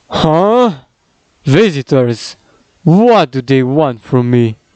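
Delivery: slow, drawn-out, put-on made-up creature voice. Voicing a character in a told story: Batrochitus Penguin voice. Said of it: "here we go with his voice".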